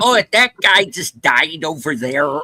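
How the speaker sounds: exaggerated put-on Upper Midwest accent. Imitating a movie character who overdoes the accent: over-the-top Fargo accent. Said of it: "Everybody's doing that Fargo accent".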